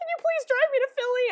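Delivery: acted hysterical, tearful sobbing, very high. Retelling a call asking a friend for a ride: imitating own hysterical crying. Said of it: "hysterically crying".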